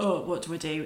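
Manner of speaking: plain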